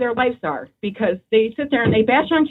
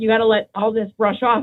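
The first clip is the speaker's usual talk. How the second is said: plain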